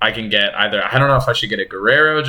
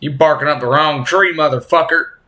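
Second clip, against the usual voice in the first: put-on higher-pitched Southern accent; 5 semitones higher than usual. A host opening Friday Night Fight Talk slips into a Bryce Mitchell southern accent. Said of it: "putting on southern accent".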